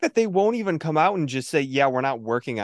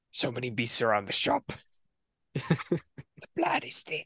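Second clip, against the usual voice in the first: clumsy, deliberately bad whispered character voice; 8 dB quieter than usual. Quoting the game after joking about a sequel: horrible Gascoigne impression.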